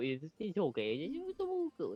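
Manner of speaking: put-on babyish baby talk voice. Showing the others how the character randomly goes into baby talk: baby talk voice. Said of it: "randomly go into baby talk".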